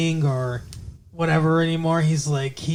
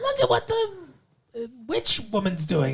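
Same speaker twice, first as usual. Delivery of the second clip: high nosy-neighbor voice, pitch swooping around; 6 semitones higher, 4 dB quieter than usual. Comparing a gossipy neighbor to a TV character: Mrs. Kravitz voice. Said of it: "I can't do that voice anymore".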